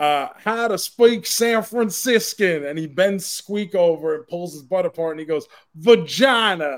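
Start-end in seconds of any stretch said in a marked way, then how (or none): 0.0-2.6 put-on high-pitched Australian accent. Telling a story about what a man said, in an australian accent. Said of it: "he does an Australian accent".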